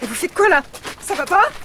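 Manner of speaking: agitated, heated protest. Uninvited guest being escorted out by a security guard: agitated. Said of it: "Du calme".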